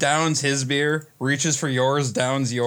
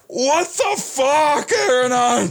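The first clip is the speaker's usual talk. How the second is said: very high, very slow, drawn-out screaming cry; 12 semitones higher, 4 dB louder than usual. Telling how Stan popped up, retelling a scream. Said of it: "pops up screaming like".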